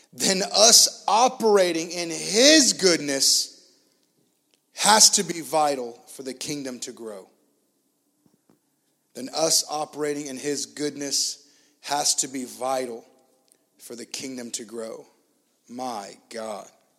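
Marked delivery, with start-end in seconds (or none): 0.2-15.1 said slowly, slow and deliberate, unhurried. Reading a quote aloud for listeners and podcast audience, said slowly. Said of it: "I'm going to say this slow".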